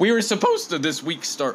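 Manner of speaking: high voice cracking and breaking mid-line. Responding to Heath's question before they end, voice cracking. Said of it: "that was an awful voice crack".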